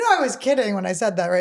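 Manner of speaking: ordinary talk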